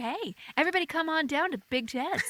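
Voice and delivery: radio commercial pitchman announcer delivery. Speaker recalling giving up on commercial copy work, doing a radio announcer voice. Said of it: "I am not gonna get radio announcer".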